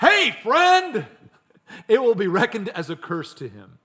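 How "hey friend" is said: very high-pitched, loud voice. Preaching on a proverb, acting out blessing a friend early in the morning, loud voice. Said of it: "with a loud voice".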